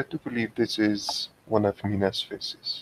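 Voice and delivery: soft, hushed whispered aside. Voicing a character leaning close to a companion: whispering. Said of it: "just whispers to him".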